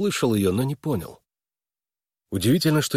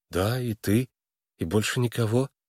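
ordinary delivery

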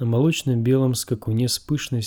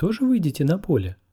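hasty, quick, pitched up; 6 semitones higher than usual. A woman puts a question to the king, asking hastily. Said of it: "поспешно спросила она".

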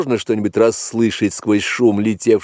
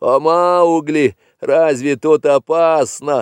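mocking, mimicking manner, slower pace; 5 semitones higher than usual. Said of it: "передразнил его мальчик".

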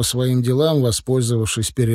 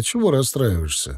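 plain reading voice

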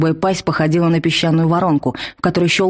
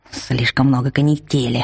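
hissing creature voice, lower pitch; 4 semitones lower than usual. Narrating a magic battle, the monster answers the heroine, hissing monster voice. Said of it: "прошипела тварь".

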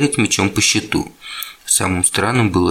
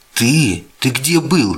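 astonished, high, drawn-out outcry; 5 semitones higher than usual. First-person narrator reacting to a character peeking out from under the stairs: exclaiming. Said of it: "воскликнул я".

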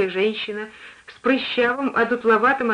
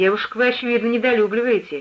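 plain

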